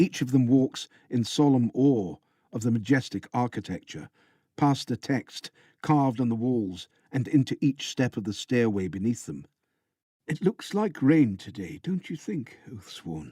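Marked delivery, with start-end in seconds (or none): 10.3-13.3 murmuring, conversational aside. A mendicant behind the Oathsworn speaks up on the stairway, in a quiet murmur. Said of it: "A quiet voice murmurs behind you".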